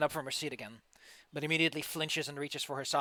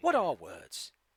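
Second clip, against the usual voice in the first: narrator-like announcer voice; 3 semitones lower than usual. Joking with the other players in a Monty Python announcer voice. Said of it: "sounded like a Monty Python announcer there".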